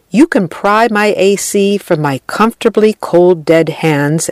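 ordinary talk

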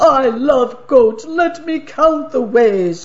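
high squealing troll voice. Narrator reading a fairy tale, voicing the troll: squealing troll voice. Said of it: "He clapped his hands together and squealed".

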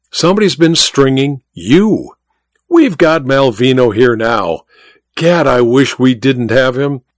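ordinary delivery

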